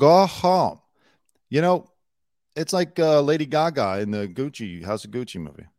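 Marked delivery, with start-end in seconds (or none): 0.0-0.8 high, loud, mock fake Spanish accent. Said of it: "if you're gonna do the fake Spanish accent".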